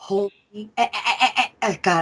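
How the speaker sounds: stuttering. Reacting to what's being explained, stuttering. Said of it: "I'm like stuttering".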